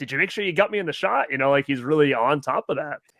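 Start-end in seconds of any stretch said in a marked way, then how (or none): 0.0-1.3 put-out, irritated, somewhat mad, annoyed tone. Retelling how the actor speaks to the other people: imitating someone kinda mad. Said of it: "kinda mad".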